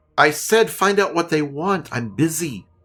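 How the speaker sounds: woman's shouting voice, pitched high. Game narrator voicing a woman who shouts orders at the gnome; shouting woman. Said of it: "you hear a female voice shout".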